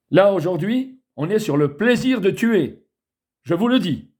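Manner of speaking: irritated. Addressing viewers directly, openly saying so: angry. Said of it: "Je suis énervé, vous le voyez, je suis en colère".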